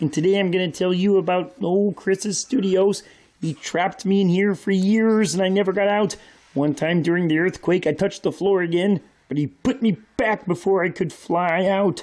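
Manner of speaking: talking frog puppet character voice. Joking about a frog figure trapped in the studio: Kermit the Frog voice. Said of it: "I'm Kermit the Frog here".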